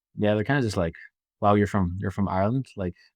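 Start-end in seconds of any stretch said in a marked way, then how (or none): none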